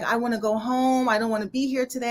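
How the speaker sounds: put-on crying voice. Retelling what she said while still crying: imitating her crying. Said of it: "still crying".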